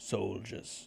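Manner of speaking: put-on upper-class character voice, posh. Voicing a character asking for soldiers, in a posh voice. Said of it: "my voice is quite posh".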